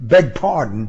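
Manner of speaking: ordinary talk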